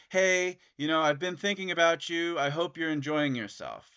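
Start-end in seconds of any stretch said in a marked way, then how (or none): none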